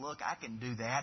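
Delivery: put-on mocking tone. Recalling saying it over and over in front of him, retelling a mocking remark. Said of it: "just kind of as a mocking way".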